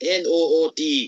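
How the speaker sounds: Scottish-accented pronunciation of a word. Saying the word just spelled out, sounding Scottish. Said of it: "It just sounded Scottish when I said it".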